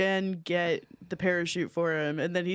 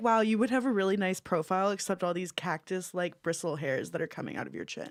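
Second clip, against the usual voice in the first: usual speaking voice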